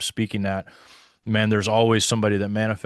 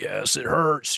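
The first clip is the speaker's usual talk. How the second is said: snarled, growly cry of pain; 4 semitones higher than usual. Retelling a girl's answer to being asked about healing: imitating a growling scream. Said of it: "growling and screaming".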